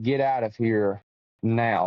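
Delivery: put-on stern tone. Retelling what a voice told them to do, imitating a very stern voice. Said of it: "like in a very, very stern voice".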